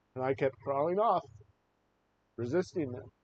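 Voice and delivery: choked up, voice catching with emotion. Recalling a military interrogation, choked up. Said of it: "I get choked up again".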